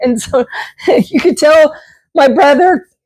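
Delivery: voice breaking with emotion. Thanking supporters, the speaker gives a shout-out to a big brother; voice cracking with emotion. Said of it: "my voice cracked again. I'm getting emotional".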